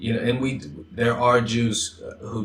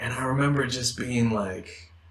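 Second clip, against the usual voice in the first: ordinary talk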